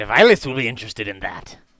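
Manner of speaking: fiendish character voice. Voicing a fiendish guard who stops the players at the gate: voicing a fiendish guard. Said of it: "He says".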